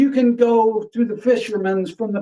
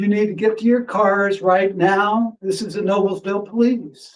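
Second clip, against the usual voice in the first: ordinary talk, nothing marked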